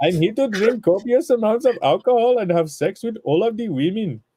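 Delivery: put-on Indian accent, pitched a bit high. Voicing Colonel El Barbarion for the chat, in an Apu impression. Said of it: "Your Apu needs work".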